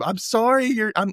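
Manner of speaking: put-on yelling. Retelling a scene where a character yells from across the room: imitating someone yelling. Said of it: "he yells out from across the room".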